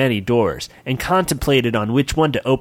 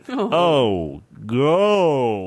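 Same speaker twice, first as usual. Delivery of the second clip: ghostly moan, "oh" stretched out. Reading a story aloud, voicing the ghost: Sir Encrusted Gemini ghost moan. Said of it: "moaned a ghostly voice".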